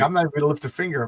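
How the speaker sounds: ordinary delivery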